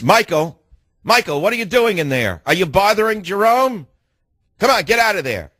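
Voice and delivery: mock, high-pitched scolding call. Retelling being caught talking to his brother: imitating someone calling out. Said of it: "And then I'd hear the voice".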